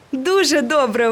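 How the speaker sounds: exclaiming. Narrator reads the angelfish's line to the cat and dog, exclaimed. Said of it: "вигукнула рибка Янгол".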